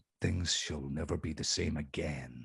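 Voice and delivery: deep, hushed movie-trailer narration, very low, badly done. Podcast guest teasing the next season, bad movie trailer voice. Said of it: "That that was my bad trailer voice".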